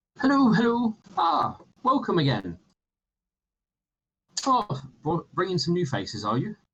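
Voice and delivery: put-on elderly unicorn character voice. Narrating a game scene, the shopkeeper greets the returning party in an old unicorn shopkeeper voice. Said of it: "older-looking unicorn who finally comes over and goes".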